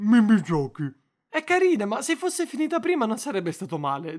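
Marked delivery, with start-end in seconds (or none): 0.0-0.9 put-on talking with mouth full, louder. Acting out a sketch where a gamer eating chips speaks: mock talking with mouth full. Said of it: "con la bocca piena dice".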